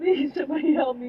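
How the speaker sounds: mock-desperate shouting, acted. Recounting walking down the street in a robe, retelling a yell for help. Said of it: "I was like yelling for help".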